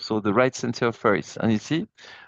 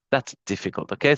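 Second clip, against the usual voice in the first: plain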